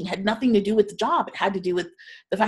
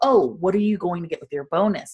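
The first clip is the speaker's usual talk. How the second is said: put-on playful, teasing, jokey tone; 2 semitones lower than usual. Retelling what he jokingly asked as they were packing up, retelling a joking question. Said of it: "he jokingly said".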